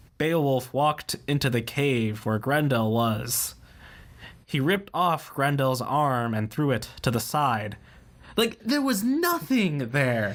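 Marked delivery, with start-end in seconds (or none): 0.2-7.8 expressionless, flat, level monotone reading. Imitating how she read an epic poem aloud, monotone. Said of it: "the most monotone thing ever. ... She read it like this".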